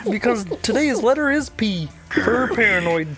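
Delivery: high, froggy puppet character voice. During group banter, one host answers another: Kermit the Frog voice.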